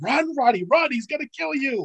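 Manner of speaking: very high-pitched, frantic, urgent yell. Recalling roddy in danger, the speaker is retelling their own yell. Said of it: "I yelled".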